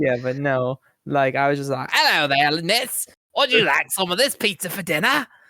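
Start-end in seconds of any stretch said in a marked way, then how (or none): 1.9-5.3 put-on British accent with raised pitch. Retelling a call to her about dinner, imitating own British accent. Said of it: "the entire conversation as though I were British".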